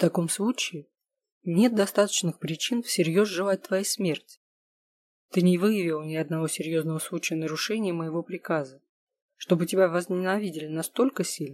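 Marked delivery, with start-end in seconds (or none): none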